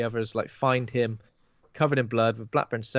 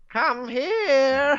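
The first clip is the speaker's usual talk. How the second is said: eerie, spooky, very high ghostly calling voice; 4 dB louder than usual. Describing the newly dead in the cloud calling people in, spooky ghost voice. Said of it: "doing his best spooky voices".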